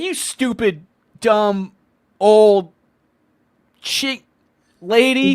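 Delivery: put-on very drawn-out, slow, loud, furious rant. Imitating the one who insulted the old lady: imitating someone angry.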